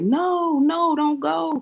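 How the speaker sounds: very slow, stretched-out, very high-pitched screaming. Retelling how the others pleaded not to go with him: imitating people screaming. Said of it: "So they just screaming".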